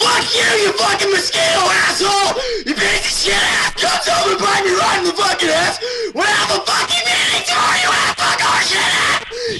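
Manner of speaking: seething, furious, raging rant. Doing a requested rage rant at a mosquito: rage scream. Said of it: "Three, two, one, rage".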